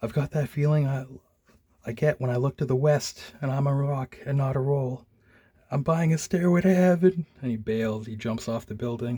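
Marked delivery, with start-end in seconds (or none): 0.0-7.2 panicked, unhinged, frantic, freaking-out rambling. Retelling a comic scene where a junkie starts freaking out: imitating someone freaking out. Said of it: "he starts freaking out".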